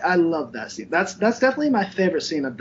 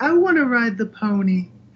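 high, slow, pitched-up sleep-talking voice; 4 semitones higher, 4 dB louder than usual. Recounting a scene, the speaker imitates a man talking in his sleep, higher-pitched voice. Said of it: "in a kind of higher pitched voice".

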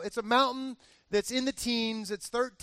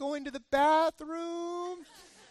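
high, squeaky, piping little voice; 6 semitones higher than usual. Retelling what JD answered when asked what he'd been doing, JD's high squeaky voice. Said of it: "He still has that high squeaky voice".

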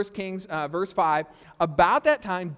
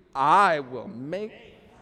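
low voice, said with a little attitude; 4 semitones lower than usual. Leading an audience in saying a line together, with a little attitude. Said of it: "say it out loud with a little attitude".

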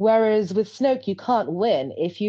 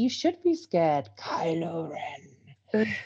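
alien monster character voice; 3 semitones lower, 6 dB quieter than usual. Retelling what Snoke tells Kylo Ren, Snoke impression. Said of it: "That was my Snoke impression".

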